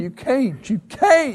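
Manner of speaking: very high, slow, drawn-out, tearful, crying, protesting tone. Retelling protesting after being given a car: imitating own tearful words. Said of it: "I started crying".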